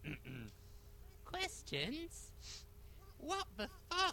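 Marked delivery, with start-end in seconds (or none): 1.2-4.1 high-pitched put-on girly voice. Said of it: "use, like, a girly voice for that".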